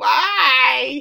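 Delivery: loud, rough, anguished wail, why stretched long. Retelling a scene where Coach Ed wails like Nancy Kerrigan. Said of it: "doing the whole full Nancy Kerrigan".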